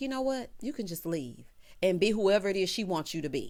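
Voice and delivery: normal talking voice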